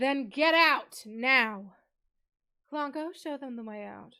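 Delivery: smug haughty British voice. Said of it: "level of complete smugness".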